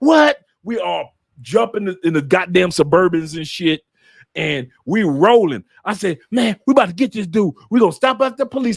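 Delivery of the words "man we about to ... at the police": play-acted fired-up, eager, high and excited. Retelling own past words about heading to the police station: imitating own excited voice. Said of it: "how I literally said it with excitement".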